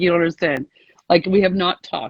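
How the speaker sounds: plain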